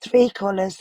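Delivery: voice giving out into a whisper. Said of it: "Sorry for my voice".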